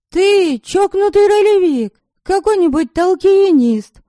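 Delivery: very high, shrill, triumphant exultant cry. A woman tells a strange man she has figured him out, triumphant exclamation. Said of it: "торжествующе воскликнула я".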